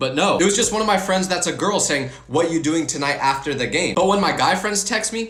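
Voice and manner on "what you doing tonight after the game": ordinary delivery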